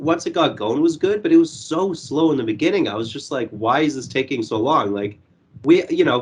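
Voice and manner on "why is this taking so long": usual speaking voice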